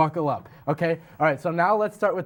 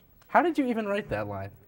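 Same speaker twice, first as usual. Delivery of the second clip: usual speaking voice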